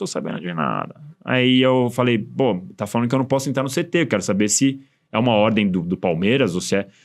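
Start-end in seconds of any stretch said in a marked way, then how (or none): 0.0-0.9 very low, rough, creaky little voice. Retelling a phone call from Tirone, imitating Tirone's little voice. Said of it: "Ele tinha uma vozinha assim".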